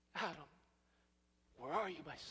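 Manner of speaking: soft, grieving, sorrow-filled calling out. Retelling god calling out to adam, acting out a grieving, sorrowful tone. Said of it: "could hear the grief and the sorrow".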